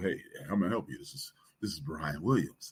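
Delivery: low, quick, polished businesslike professional phone voice. Answering the house phone to a salesman, switching to a polished professional phone voice. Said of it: "I stop talking like I'm talking now, and I go".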